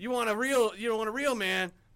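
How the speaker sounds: loud, high, taunting trash-talk voice. Quoting the best Rocky villain's taunts: Clubber Lang impression. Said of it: "He talks so much shit".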